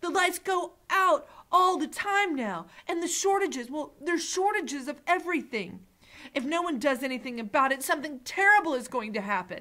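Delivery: urgent, upset cry, high and loud. Narrator reading a character jumping up from his seat to answer the mayor, crying out. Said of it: "cried Dune".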